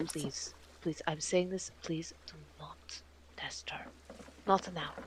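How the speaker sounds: put-on pleading whisper. Acting out what he will whisper about a witch: acting out a whispered plea. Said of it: "he's going to whisper this".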